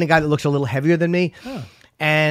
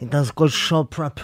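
put-on muffled stuffed-cheek voice; 2 semitones lower than usual. Prompted for more, you answer in character: Godfather impression, mouth full. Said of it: "without your cheeks stuffed with the fucking pretzels".

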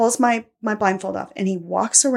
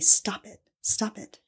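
slow, hushed, drawn-out whisper; 5 dB quieter than usual. Retelling what someone whispered to the speaker: imitating someone whispering. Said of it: "he's whispering to me".

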